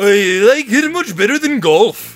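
put-on Swedish accent. Quoting a man's answer when asked about archery, in a Swedish accent. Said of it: "Swedish accent".

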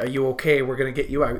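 ordinary delivery

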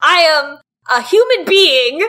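mock screaming. Recounting a round of a game, the speaker acts out what she screamed: retelling a scream. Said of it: "she screams like".

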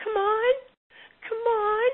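mock, very high, loud, frantic, panicked voice. Recounting a tense moment, the speaker imitates Melanie's high panicked voice. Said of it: "her voice was high and pitched".

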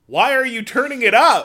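shrill yell, pitched way up and loud. Retelling shouting to a man who turned the vehicle's stereo up: retelling a shout. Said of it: "I'm like shouting to him".

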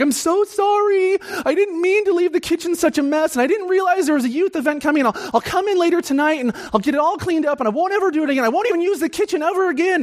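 mock frantic, very high, hysterical outpouring. Retelling a caller's apology about a messy kitchen: imitating a hysterical caller. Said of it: "she was, like, hysterical".

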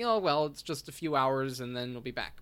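ordinary talk, nothing marked

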